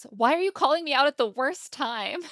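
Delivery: put-on, very high, exasperated, irritated snapping. Retelling a bar story, speaker voices a woman snapping at Brian: retelling an irritated snap. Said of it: "and she snaps".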